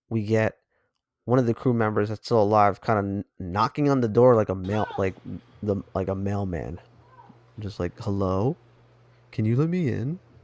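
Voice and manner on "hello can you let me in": deliberately terrible, slow line reading, really bad acting. Retelling a crew member knocking on a door: imitating really bad acting. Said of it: "Really bad acting".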